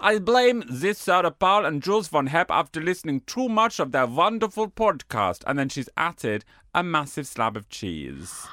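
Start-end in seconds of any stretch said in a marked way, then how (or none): 0.0-5.4 put-on Austrian accent, pitched up. Reading out a listener's message after choosing an accent: put-on austrian accent. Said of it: "I'll do Austrian".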